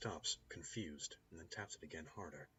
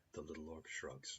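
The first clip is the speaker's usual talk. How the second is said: ordinary delivery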